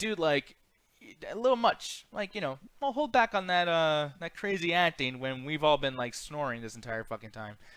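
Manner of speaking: ordinary talk, nothing marked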